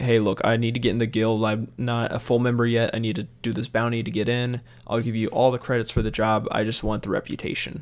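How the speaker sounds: ordinary talk, nothing marked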